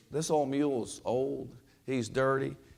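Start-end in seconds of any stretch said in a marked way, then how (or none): none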